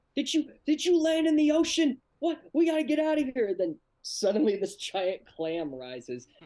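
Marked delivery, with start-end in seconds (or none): 0.2-3.5 very high, loud, frantic panicked voice. Retelling a cartoon scene where Rick wakes up: imitating Rick freaking out. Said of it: "he starts freaking out".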